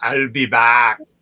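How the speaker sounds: deep, booming, loud low-pitched voice. Asking to be judged on it, the speaker does an Arnold Schwarzenegger impression. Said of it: "tell me if I sound like Arnold Schwarzenegger".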